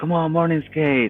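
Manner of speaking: mock excited, smiley voice, eager and urging. Retelling a friend urging a morning skate: imitating an excited, smiley friend. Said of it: "All excited, all smiley".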